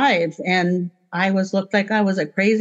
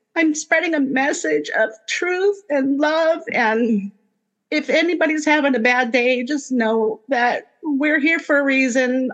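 speaking through light tears; 6 semitones higher than usual. Speaker addresses anyone having a bad day, crying a little. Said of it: "Maybe that's why I'm even crying a little bit".

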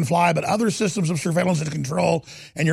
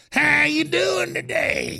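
put-on high, slow old woman granny voice; 10 semitones higher than usual. Mocking a politician speaking to people in Kentucky: imitating Hillary talking like Granny. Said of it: "Talking like Granny".

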